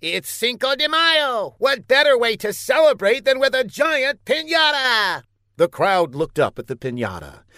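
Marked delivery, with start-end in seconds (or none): 0.0-5.2 clear, very high-pitched voice. The mayor, hailed as a wizard, answers the crowd: clear, high-pitched voice. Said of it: "I keep telling you that I'm not a wizard. I'm a mayor. ... he said in a clear but high-pitched voice".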